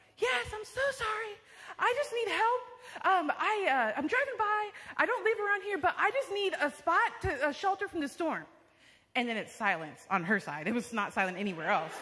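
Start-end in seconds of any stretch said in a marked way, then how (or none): 0.2-8.4 put-on raised, very high yelling. Retelling a plea for shelter at a door during a loud storm: retelling own yelling. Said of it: "so I'm yelling".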